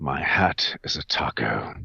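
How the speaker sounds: low, soft, exasperated sighing delivery. Performing a line a fan requested in character: exasperated Haytham voice. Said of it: "he just kind of lets out an exasperated sigh".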